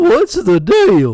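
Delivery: goofy, hammed-up comic voice, very high and loud. Demonstrating an impression he used to do: goofy Jerry Seinfeld impression. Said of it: "used to do a very good Jerry Seinfeld".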